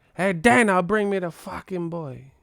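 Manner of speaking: put-on Cuban accent. Talking about a fight, the speaker acts out a demand: Cuban accent. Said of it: "come to fight with a Cuban accent".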